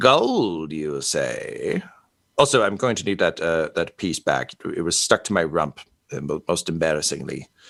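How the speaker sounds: massive, big dragon character voice.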